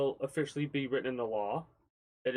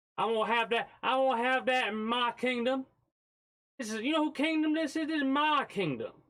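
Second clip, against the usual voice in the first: put-on accent, very high and kingly; 12 semitones higher than usual. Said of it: "the accent is necessary".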